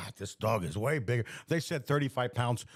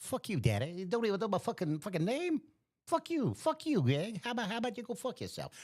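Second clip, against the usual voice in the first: higher, salty, foul-mouthed cursing dog voice; 9 semitones higher, 3 dB quieter than usual. Joking about mixing up the dog's name, voicing Callie the dog. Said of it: "Callie's right there going".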